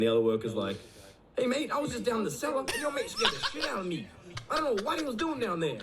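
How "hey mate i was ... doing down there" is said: awful fake American accent, very high and soft. Retelling what another worker said to the speaker, in a bad american accent. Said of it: "the worst American accent I've ever heard".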